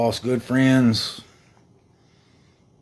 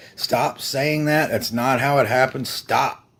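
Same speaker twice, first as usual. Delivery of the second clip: plain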